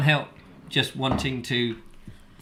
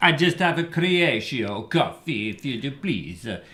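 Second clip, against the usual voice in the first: fake, put-on pseudo-Italian accent. Ordering a coffee in Croatia, in a fake pseudo-Italian accent. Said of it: "with an, a fake pseudo-Italian accent".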